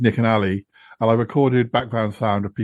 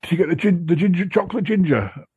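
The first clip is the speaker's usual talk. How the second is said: higher put-on desperate pleading voice; 7 semitones higher than usual. Retelling a phone call in which Yeti Uncle John desperately asks for ice creams: imitating desperate Yeti Uncle John. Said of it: "desperate for me to buy particular ice creams".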